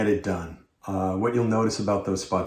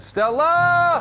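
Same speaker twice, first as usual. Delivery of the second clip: bigger, more intense delivery; 5 dB louder than usual. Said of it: "but I need more".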